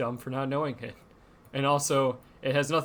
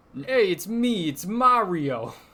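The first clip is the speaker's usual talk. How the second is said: loud, swooping, exaggerated New York accent; 7 semitones higher, 6 dB louder than usual. Showing how they do their bit, exaggerated New York Mario voice. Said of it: "us doing a very exaggerated New York accent".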